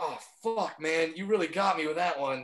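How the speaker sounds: sarcastic, put-on wounded, defeated dismay. Imagining reacting to a heckler's weak insult: mock defeated reaction. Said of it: "you think I'm gonna stop and be like".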